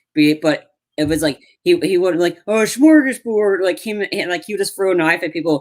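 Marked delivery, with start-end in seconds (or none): 2.5-3.6 put-on mock Swedish babbling voice. Imagining a puppet chef in an action movie role: Swedish Chef voice. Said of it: "the Swedish Chef".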